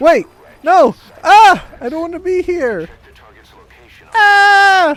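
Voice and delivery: very high, very loud terrified scream, long "ah". Testing out a scream, screaming in terror. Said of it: "Should I should I scream like this?".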